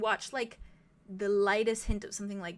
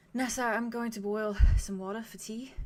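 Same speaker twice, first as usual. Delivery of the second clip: mild, gentle, easy, softly spoken. Narrating a scene, voicing someone behind a door: very soft voice. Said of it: "just very softly says".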